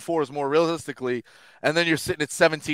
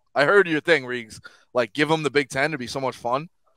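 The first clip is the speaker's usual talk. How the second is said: normal talking voice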